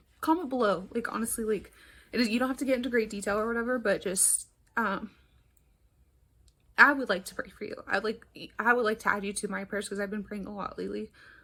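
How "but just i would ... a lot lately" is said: sincere voice welling with emotion. Speaker asking viewers to comment so she can pray for them, getting emotional. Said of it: "I'm like getting emotional".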